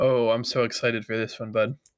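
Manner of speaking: fake, sarcastic excitement with audible pain. Reacting to the topic of roster moves: pained sarcastic voice. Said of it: "Can you hear the pain in my voice".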